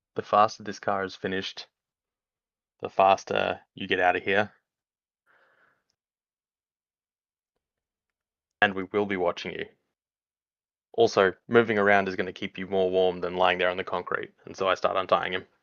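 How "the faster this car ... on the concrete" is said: cold, menacing, threatening delivery. Speaking in character while untying a captive after a glare: threatening glare. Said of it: "Deathstalker glare".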